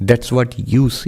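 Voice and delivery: very slow, deliberate, drawn-out, unhurried speech. Retelling how the Swami answered the questioners: very slow, like the Swami. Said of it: "He would speak very slowly".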